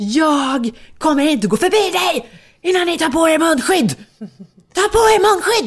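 put-on very high, shrill, long drawn-out screaming. Retelling how another mother three meters away screamed at them, retelling a scream. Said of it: "Då skriker hon och hon bara".

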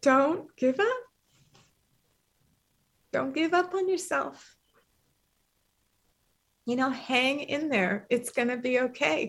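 moved, emotional, heartfelt delivery. Asked what advice you would give your younger self, answering emotional. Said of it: "that makes me so emotional. Sorry".

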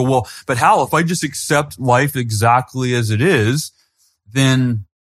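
acted-out slow, patronizing, condescending voice. Quoting people who question his idea, the speaker puts on a mock-condescending voice. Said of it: "I don't mean to do like a condescending voice".

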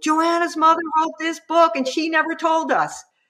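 play-acted, very high-pitched yell. Speaker retells how a woman yelled out to the whole group, retelling a yell. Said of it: "she yelled out to the whole group".

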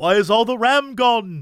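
lousy, botched put-on swashbuckling pirate accent. Quoting a movie line as Jack Sparrow: terrible Jack Sparrow accent. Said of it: "Terrible accent".

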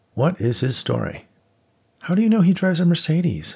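wary, probing, suspicious, pitched very high. A narrator reads Jennifer's question to Nate, asking suspiciously. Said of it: "Jennifer asked suspiciously".

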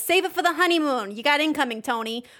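put-on sudden switch into a Jersey accent.

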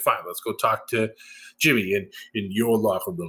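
cocky, smug, self-satisfied, puffed-up tone. Retelling a wrestling segment where roman agrees to meet: imitating a smug reply. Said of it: "being all smug and shit".

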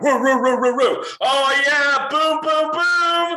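put-on barking, thick American accent, very high pitch. Retelling how an athlete celebrated after his runs: imitating an American-sounding accent, barking. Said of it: "in the most American sounding accent, he's, like, barking".

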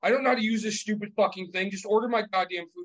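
put-on irate old man voice. Speaker retells an old man at a New York kiosk, imitating an angry old man. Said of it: "he's getting pissed".

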